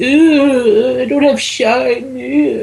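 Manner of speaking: high, slow, mopey whining moan.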